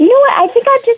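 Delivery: high, exasperated, annoyed outburst. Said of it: "really annoyed".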